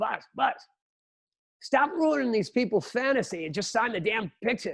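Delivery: put-on big, booming voice with a New York accent. Act out what Jocko used to say to Buzz, in Jocko's big New York voice. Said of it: "he's got this big New York voice".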